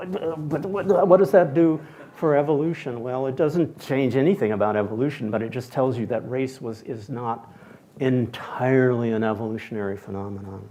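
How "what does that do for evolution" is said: put-on stammer, higher, louder, slower. A speaker acts out his older colleagues' reaction, imitating stammering. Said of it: "(Steward imitating stammering)".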